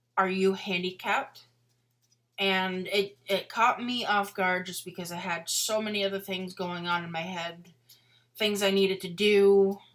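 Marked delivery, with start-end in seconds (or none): 0.2-1.4 mock patronizing, condescending, talking-down tone. Recounting what a woman asked when the speaker parked in a handicapped spot, mock-condescending. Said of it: "in kind of like a condescending tone".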